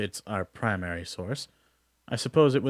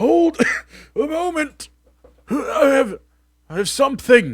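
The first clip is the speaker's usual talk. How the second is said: put-on wheezing, winded, very high and loud; 10 dB louder than usual. A narrator voices Duncan, the guild sentry, racing to catch up, wheezing. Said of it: "he wheezes".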